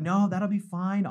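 put-on calm, reassuring voice. Retelling how Nathan answered before the swim: imitating Nathan calm. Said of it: "you were so calm".

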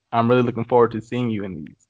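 usual speaking voice

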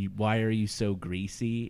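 ordinary talk

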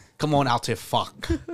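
put-on Scouse accent. Quoting a football player's line: imitating a scouse accent. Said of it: "The Scouse accent go crazy".

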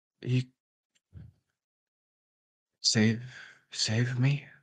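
weak, distant voice. Answering Rio's telepathic message in a tabletop game, in a faint voice. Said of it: "You do hear a faint voice back".

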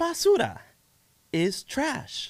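very high, sing-song cartoon voice with bouncing pitch. Explaining what a Spanish word means, in a Dora the Explorer voice. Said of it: "Were you trying to do the Dora the Explorer voice?".

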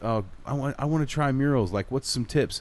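ordinary talk, nothing marked

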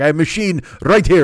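puffed-up, proud, boastful tone in broken English. Retelling how a sandwich shop owner showed his card machine: imitating someone proud. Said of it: "He's all proud".

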